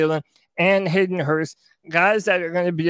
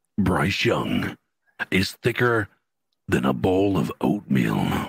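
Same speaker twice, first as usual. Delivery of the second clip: put-on smooth slick voice, lower pitch; 14 semitones lower than usual. Performing a requested line into the microphone: put-on slick voice. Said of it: "put on that slick voice of yours".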